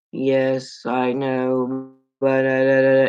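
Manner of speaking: mock disdainful flat-affect drone, level monotone. Describing how a woman talked with disdain: imitating a flat monotone. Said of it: "she goes really monotone".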